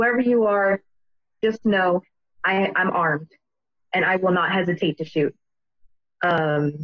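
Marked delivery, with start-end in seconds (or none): none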